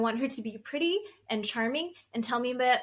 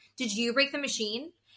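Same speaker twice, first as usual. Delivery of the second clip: put-on mean-sounding delivery. Retelling asking about the broken ice cream machine: imitating own mean-sounding question. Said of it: "And I said it just like that".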